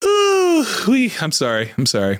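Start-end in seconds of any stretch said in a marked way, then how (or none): 0.0-0.6 high, loud scream. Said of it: "sorry for screaming into the mic".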